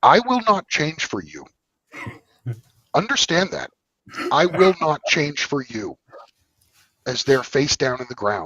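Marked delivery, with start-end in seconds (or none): 0.0-6.0 mock authoritative, commanding, slow and loud. Recalling speaking to the others doing push-ups for him, retelling a commanding voice. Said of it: "I told them in a commanding voice".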